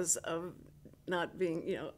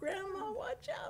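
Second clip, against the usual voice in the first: high-pitched mock kid yell. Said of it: "they're always yelling at me like".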